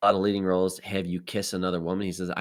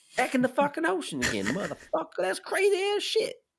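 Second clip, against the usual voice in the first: poorly done put-on voice, very high and swooping in pitch. Answering a quiz about Samuel L. Jackson: horrible Samuel L. Jackson impersonation. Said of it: "That was a horrible Sam Jackson impersonation".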